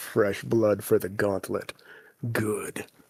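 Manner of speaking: deep, hushed voice with chuckling. A storyteller voices a voice heard in the dying players' heads: deep chuckling voice. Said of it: "you hear a deep voice chuckling in your head".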